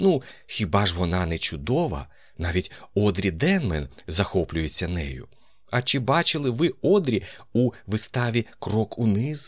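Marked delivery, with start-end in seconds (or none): none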